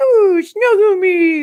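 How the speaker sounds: very high, very loud shrill silly voice. Retelling a video of a husband jumping on the bed: imitating someone being silly. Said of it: "being all, like, silly".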